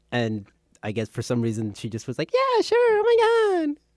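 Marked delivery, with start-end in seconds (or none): 2.3-3.7 very high-pitched voice with words stretched out. Retelling how Katie agreed to a nickname: spot-on impression of Katie. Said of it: "That was a spot-on impression".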